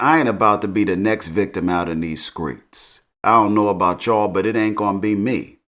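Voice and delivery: ordinary talk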